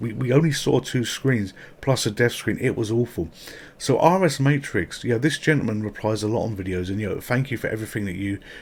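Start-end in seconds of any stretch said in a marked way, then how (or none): none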